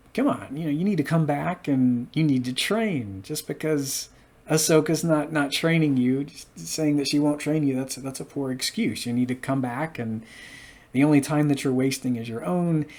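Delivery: ordinary talk, nothing marked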